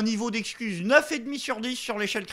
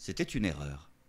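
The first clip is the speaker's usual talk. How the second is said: very hushed, quiet, small meek voice; 11 dB quieter than usual. Mocking a politician admitting a mistake: imitating a small meek voice. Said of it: "il a pris sa petite voix".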